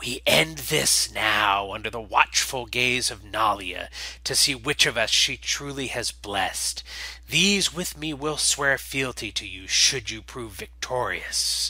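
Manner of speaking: hissed, serpent-like, reptilian creature voice. In a role-play, the exile vox faces Ockvril before both followings, hissing exile vox voice. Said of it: "From the cargo bay emerges the exile vox, [name] of Hatch Cathar, followed by an entourage of Cathar loyalist Nall. They all look fairly lean and ragged from months within the superstructure of the colony vessel. The exile vox is ... hissing softly, and then speaks. "[name], shine on you, glorious c".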